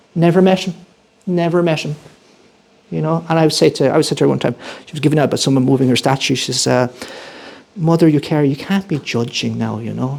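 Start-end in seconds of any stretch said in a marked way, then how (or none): 7.7-10.1 mock, very pious young voice. Retelling own past words to Mother Eucharia: put-on pious young voice. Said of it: "in my most pious kind of twenty-year-old kind of voice".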